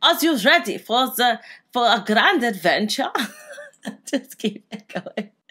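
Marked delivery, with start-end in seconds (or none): 0.0-3.1 put-on pirate voice with German accent. A player voices his game's pirate guide welcoming him, in a german pirate accent. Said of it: "He's just a German pirate".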